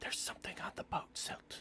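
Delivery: soft, breathy whisper, barely above the breath. Game master voicing a floating figure who wakes silt, in a whisper. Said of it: "and he whispers".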